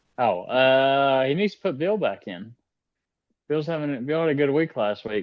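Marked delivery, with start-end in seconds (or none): 1.3-5.3 mournful, downcast, sad and sorry-sounding delivery. Answering when asked for a pick, sounding sad. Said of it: "That sounded so sad right there".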